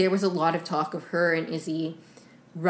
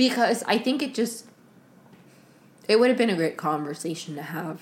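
choked-up, teary voice on the verge of tears. A speaker discussing what a show left out, tearing up. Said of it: "I'm literally tearing up again".

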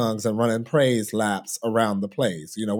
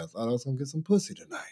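cool, casual, offhand, nonchalant throwaway delivery; 3 semitones higher, 6 dB quieter than usual. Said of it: "in this just very, you know, nonchalant way".

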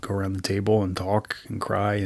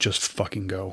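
mock tearful, choked, words forced through tears. Retelling what a friend said on the road: imitating tearful choked speech. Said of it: "through tears and choking".

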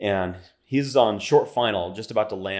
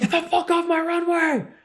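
very high, screaming from far off. Recalling yelling from the catwalk at someone on his runway: retelling a scream. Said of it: "I'm sitting there screaming from the catwalk".

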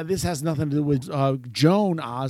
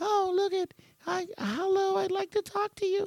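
deliberately bad, very high put-on celebrity voice; 4 dB quieter than usual. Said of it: "That's my horrible [name], uh, voice".

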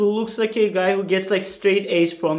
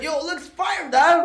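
casual, relaxed voice, pitched up; 8 semitones higher than usual. Retelling a friend praising his own cringe photo: imitating Mister G. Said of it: "He's like".

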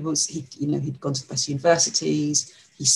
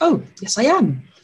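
acted, very jovial, good-humoured, high voice; 8 semitones higher than usual. Recounting own reply to a man worried he had caused offence, jovial voice. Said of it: "said in a very jovial voice".

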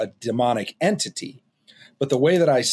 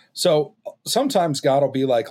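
ordinary talk

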